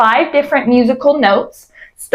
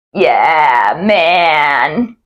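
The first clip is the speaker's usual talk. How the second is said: crackly, creaky male California surfer drawl, vocal fry; 8 semitones lower than usual. Demonstrating glottal fry as a california surfer impression: vocal fry surfer impression. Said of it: "glottal fry ... it sounds kind of like this ... my impression of a California surfer".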